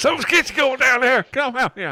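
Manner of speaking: put-on thick Southern US accent, very high and loud. In a game scene, a character yells to the sergeant about the commotion, very southern accent. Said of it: "that was southern as hell".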